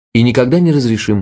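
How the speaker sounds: usual speaking voice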